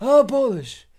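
put-on young man doing an elderly-sounding old man voice. Retelling a stranger's reply: imitating young man's old-man voice. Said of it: "a young man with an old man's voice".

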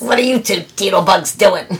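put-on low, dropped-down mother voice. Retelling what mom said after being woken by clanging pans: put-on lower voice. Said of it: "when I do that voice, but she did have lower voice".

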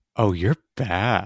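put-on low, hushed, seductive male voice. Joking with the other speaker, in a sexy guy impression. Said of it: "that was my sexy guy impression".

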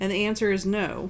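ordinary talk, nothing marked

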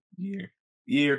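voice breaking and cracking mid-line. Telling friends about an upcoming movie, voice cracking. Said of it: "I voice cracked".

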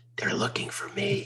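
put-on tiny, high little-boy whisper. Retelling a phone call where a little boy answers, little boy whispering. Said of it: "a little boy answers in a whisper".

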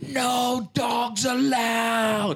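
screaming at a very high pitch, repeated. Retelling a woman being thrown out in San Francisco, retelling a woman screaming. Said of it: "she kept screaming".

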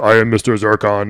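slow, mechanical robot voice. Describing a game character to the group, in a Mr. Zircon robot voice. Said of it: "He talks like this".

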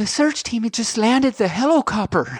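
put-on high, piping little child's voice. Telling a joke, voicing the child on the phone: imitating a child's little voice. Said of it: "the little voice says".

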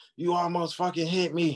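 high, screaming, yelled outburst. Retelling a road quarrel where the driver screamed: imitating someone yelling. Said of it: "she cussing, she yelling, she screaming".

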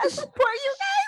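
over-the-top, supportive gushing, pitched way up high. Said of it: "Then she's like".

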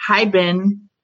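robotic phone assistant voice. Retelling how a man's phone suddenly greeted him: Siri voice. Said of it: "in like the Siri voice".

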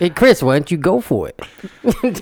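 high tough-guy boxer voice. In a conversation about someone's accents, doing a Rocky impression. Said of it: "Are you talking like Rocky".

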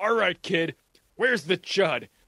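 acted barking voice, mock barking delivery. Recapping a scene where one character confronts another, retelling a barked demand. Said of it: "He barks right in his face".

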